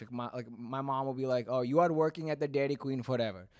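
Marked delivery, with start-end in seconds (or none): 1.5-3.3 put-on Indian accent. Comedian acting out his mom's line in his comedy, indian accent imitating mom. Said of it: "when I do it".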